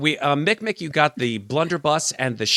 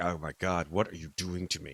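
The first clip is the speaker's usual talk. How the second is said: very deep, very soft, hushed cat voice; 8 semitones lower, 12 dB quieter than usual. Voicing a cat that is being handled on camera: voicing a cat. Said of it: "Cat's like".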